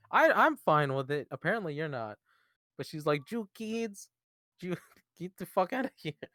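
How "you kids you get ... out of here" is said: put-on soft, pitched-up Mexican accent. Discussing a woman's backstory, speaker quotes her, imitating her stereotyped accent. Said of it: "her accent's definitely kind of racist".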